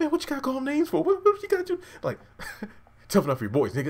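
very high, rushed voice breaking up. Retelling a man standing up to Leon, imitating a voice cracking. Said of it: "like his voice cracking up and everything".

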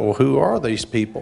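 normal talking voice

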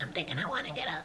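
high, quick pet voice. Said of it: "That's my Nelly voice".

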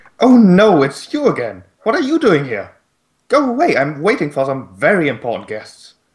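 rather high-pitched, swooping creature voice. Narrating an unseen voice that addresses the listeners, in a high-pitched voice. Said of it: "a rather high-pitched voice addressing you".

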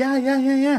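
very high, hen-like clucking chatter. Mocking how women pump each other up in agreement, mock clucking agreement. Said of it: "they start clucking and they're like doing this".

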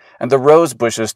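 plain reading voice

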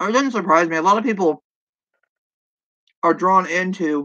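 talking with mouth full. Eating while talking to the audience, the speaker talks with a mouthful. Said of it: "Sorry for talking my mouthful".

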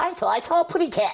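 very high, squeaky cartoon bird voice.

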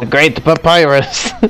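put-on silly, high, comic voice, slightly French accent. Streamer reads Papyrus's game dialogue aloud, in a Waluigi voice. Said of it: "I did sort of a Waluigi voice for Papyrus".

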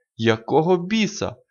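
startled, high exclaimed outburst. Narrator reads a reporter reacting as his flash goes off: exclaimed. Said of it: "вигукнув репортер".

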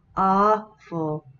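awful, first syllable aw stressed hard, rising. English pronunciation lesson in Vietnamese, stress on first syllable of awful. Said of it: "đọc nhấn mạnh vào vần đầu tiên, đọc rõ mạnh vào vần đầu tiên, giọng đi lên".

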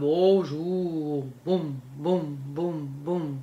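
deep, lumbering, very slow elephant rumble. Explaining low and high sounds, demonstrating a deep elephant voice. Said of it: "il va avoir une voix grave".

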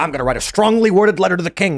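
ordinary talk

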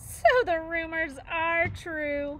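very loud, very slow, high, said while laughing. A bear, as a gosling swoops between the robot and the bears, laughing. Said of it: "Nettle laughed".

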